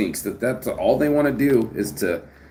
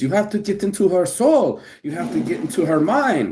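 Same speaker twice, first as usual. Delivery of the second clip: put-on Ukrainian-accented English; 4 semitones higher than usual. Imitating a woman who talks with a Ukrainian accent: imitating a Ukrainian accent. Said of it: "the one with the Ukrainian accent and talks like this".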